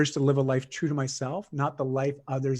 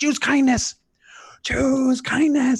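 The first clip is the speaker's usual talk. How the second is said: very high, loud, piercing shrill shriek; 11 semitones higher, 5 dB louder than usual. Retelling how she reacts when tension rises with the kids, imitating a shrill, shrieky voice. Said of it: "she says in this shrill, shrieky voice".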